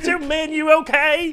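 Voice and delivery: high, loud comic book voice. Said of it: "If you do any voices".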